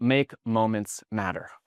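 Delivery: ordinary delivery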